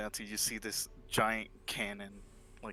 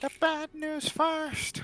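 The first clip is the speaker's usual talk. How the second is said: calling voice, high-pitched and slow. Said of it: "you, you just hear".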